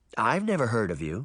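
plain reading voice

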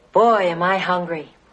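cool, relaxed low voice. Coaching someone on what to say to a coworker, in a real cool voice. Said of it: "say in a real cool voice".

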